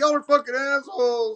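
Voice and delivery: put-on, pitched way up, mad, furious outburst. Retelling how the prank victim reacted after the skit: imitating someone angry. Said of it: "He was mad".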